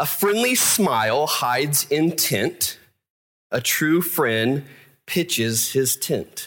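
very slow, with pitches and tent stressed hard. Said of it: "say it very slowly".

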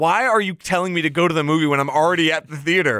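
ordinary talk

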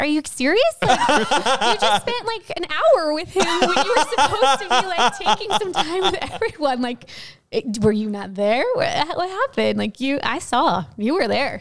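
high mock scream while laughing.

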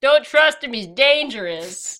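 mock heckling yell, tossed out loudly. Retelling a scene where Ernest yells at a movie screen: imitating Ernest yelling. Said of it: "Ernest yells at the screen".

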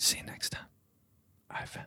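hushed whisper. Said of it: "We're gonna whisper again".

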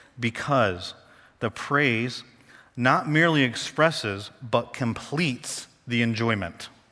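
deliberately slow delivery. Reading a key quote aloud to your listeners, reading very slowly. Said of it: "I'm going to read this really slow".

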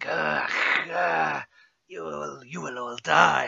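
slow, creaky, drawn-out rough vampire hiss. Voicing the vampire Larga Muerte threatening the players: hissing Larga Muerte voice. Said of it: "you hear the hiss of the vampire, Larga Muerte".

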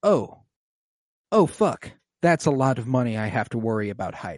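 mock sudden jolt of alarm. Retelling a character hearing about a large sum, imitating an alarmed reaction. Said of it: "Tay is alarmed".

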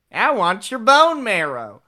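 pitch up with swings. Answering a request to say the line in a Ted Cruz voice. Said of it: "in a Ted Cruz voice".

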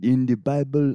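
put-on Haitian accent. Imitating a priest at church: imitating a Haitian accent. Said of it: "I don't know how to do a Haitian accent".

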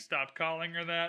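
normal talking voice

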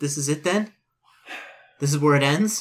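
sobbing while speaking, tearful voice. Voicing a character in a role-playing game, sobbing. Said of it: "and she begins like sobbing".

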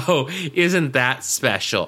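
ordinary delivery

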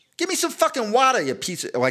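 very high, swooping Boston accent, R dropped in water. Comparing New York and Boston accents, demonstrating in a Boston accent. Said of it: "And Boston would be like wada".

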